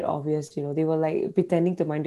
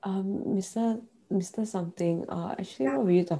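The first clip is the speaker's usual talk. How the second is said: put-on sleepy, groggy, just-woke-up voice, much quieter; 2 semitones higher, 6 dB quieter than usual. Acting out a student talking to a teacher, mock-sleepy, just woke up. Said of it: "You sound like you just woke up".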